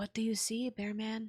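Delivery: whispering. In a role-play scene, Tess, on alert, asks Bearman what he sees: whisper. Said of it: "She kind of whispers".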